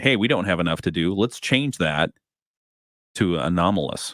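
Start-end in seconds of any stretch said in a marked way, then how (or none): none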